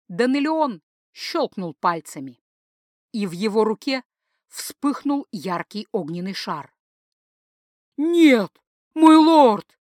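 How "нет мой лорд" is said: very loud, high wailing howl. Gorshterus recoils as his lord conjures a fireball, howling. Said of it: "взвыл Горштерус".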